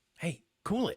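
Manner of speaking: muttered under the breath. Saying a line again as directed: under the breath. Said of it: "under your breath".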